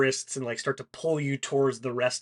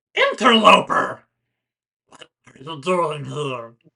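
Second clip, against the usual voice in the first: very loud, booming put-on monster voice; 3 semitones higher, 8 dB louder than usual. Voicing a creature that confronts the party: put-on creature voice. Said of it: "I'm gonna suggest that you use a n-, normal voice".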